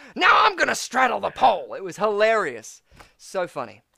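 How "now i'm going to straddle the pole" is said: high, rough and loud belted voice. Retelling a narrator's tangents from a show: Gilbert Gottfried impression. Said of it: "That is a great impression".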